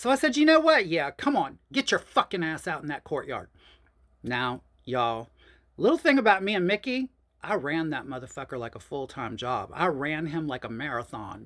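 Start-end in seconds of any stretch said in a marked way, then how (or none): 0.4-3.5 acted-out, mock-angry, pissed-off delivery. Speaker reenacts what they said when getting pissed, retelling an angry challenge. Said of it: "I was getting pissed".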